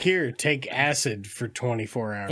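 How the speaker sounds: plain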